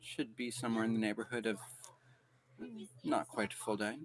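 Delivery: tiny, small voice, sounding far back. Game master voicing someone answering from behind a player's character, small voice. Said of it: "there's just a small voice from behind you".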